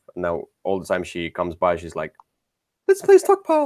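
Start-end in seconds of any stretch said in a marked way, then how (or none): 2.9-3.7 put-on old lady voice, much higher. Quoting a non-gamer friend who always asks to play, Mrs. Doubtfire voice. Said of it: "Was that your missus Doubtfire voice?".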